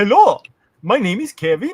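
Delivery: loud, high, put-on Indian accent. Planning how to answer the phone, the speaker demos an Indian accent. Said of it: "Just answer with an Indian accent".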